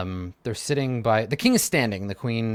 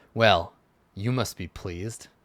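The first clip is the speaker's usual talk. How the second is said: dark, ominous tone; 2 semitones lower than usual. Voicing a king who smirks and speaks to a player: said darkly. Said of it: "he says darkly".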